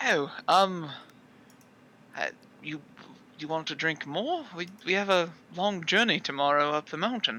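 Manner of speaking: wincing, halting, stammering flustered hesitation. As Zarius, answering a loud demand from the kitchen for more drinks, wincing, flustered. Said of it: "Zarius winces like".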